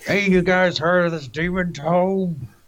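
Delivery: high-pitched in-character yelling. Playing a character who blurts out the secret book at dinner: yelling in character. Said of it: "I'm just waiting for Zygosh to yell".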